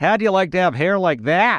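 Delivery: play-acted, very high, loud, carrying voice. Retelling the mother remarking on a stranger's hair: imitating mother saying very loudly. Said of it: "and then say very loudly".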